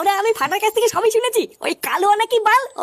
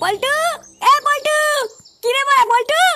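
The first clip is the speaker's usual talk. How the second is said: loud shouting, much higher pitched; 4 semitones higher than usual. Calling out to someone during a quarrel, yelling out. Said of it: "তুই এত চিল্লাচ্ছিস কেন?".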